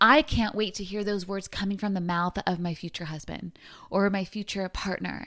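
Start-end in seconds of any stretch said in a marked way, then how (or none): none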